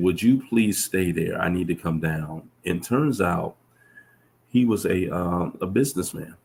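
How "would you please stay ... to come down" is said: ordinary talk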